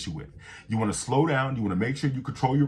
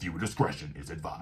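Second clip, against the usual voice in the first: serious, stern, firm tone; 6 semitones lower, 7 dB quieter than usual. Voicing a viewer discretion notice as an example: stern warning. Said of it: "you want to also make sure it's a stern warning".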